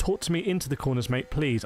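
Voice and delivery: plain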